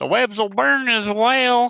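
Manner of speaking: piercing, very high, very loud full-blast yell. Voicing Grun as he yells about the webs: Grun's voice. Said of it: "in Grun's voice".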